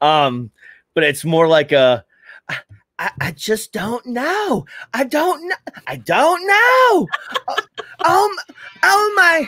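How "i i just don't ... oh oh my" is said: very high, swooping, stressed, flustered man coming apart. Describing a gentleman from tennessee who gets stressed, the speaker does his voice: imitating a stressed tennessee man. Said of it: "I love imitating his voice".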